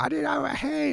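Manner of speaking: very high squealing shriek. Retelling playing Catan with kids when their sister came in: imitating a shriek. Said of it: "she's shrieking".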